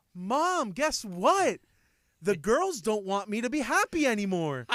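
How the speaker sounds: loud, swooping, put-on, overly cheery dad voice. Father acting out what he tells mom when the girls don't listen; put-on overly happy voice. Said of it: "I get a really happy voice".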